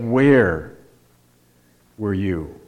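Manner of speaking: leaning heavily on the word where. Applying emphasis to a question about a text, a speaker asks with stress on where. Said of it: "So we emphasize the first word".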